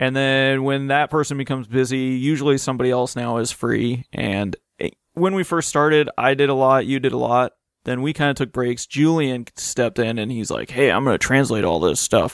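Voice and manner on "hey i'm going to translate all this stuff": acted deep masculine voice. Retelling what Julian said when he stepped in: manly Julian voice. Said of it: "in his manly Julian voice".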